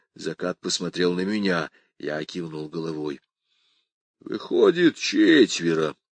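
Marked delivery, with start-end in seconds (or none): 4.2-5.9 said on a sigh. After exchanging a look with the narrator, Zakat answers the girl with a sigh. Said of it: "вздохнул он".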